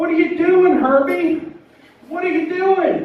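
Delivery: mock shouting, very high, desperate yelling. Recounting coming home to changed locks and yelling up: retelling a yell. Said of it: "I'm yelling up there".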